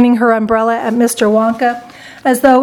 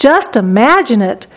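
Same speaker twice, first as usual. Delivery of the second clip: ordinary delivery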